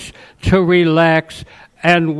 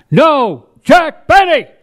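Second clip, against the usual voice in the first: much louder, very high, stern and insistent voice; 10 semitones higher, 4 dB louder than usual. Retelling a gentleman's reply during an argument in a library, much louder voice. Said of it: "he said in a much louder voice".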